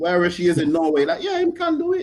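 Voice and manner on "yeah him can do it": very high Caribbean lilt, laid on thick. Imitating a grandma who believes in the player: Caribbean accent. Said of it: "I did a Caribbean accent for Oli".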